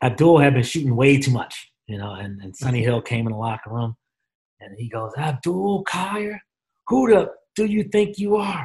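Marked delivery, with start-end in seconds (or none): 5.2-8.7 put-on, very high-pitched, stretched-out, drawn-out yell. Retelling how Sonny Hill yelled at a player at halftime: imitating a coach yelling. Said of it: "he's yelling, yelling".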